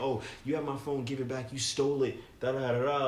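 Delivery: plain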